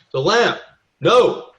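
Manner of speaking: high-pitched, loud, anguished shouting cry.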